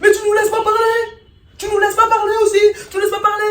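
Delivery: mocking whiny voice, high, loud.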